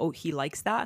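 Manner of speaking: normal talking voice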